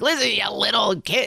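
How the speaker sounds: rough, tough, stern New York dad voice. Retelling a dad confronting a bully on a bus: imitating a tough New York dad. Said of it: "tough dad, New Yorkie dad".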